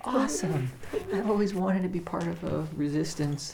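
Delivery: energized, excited delivery.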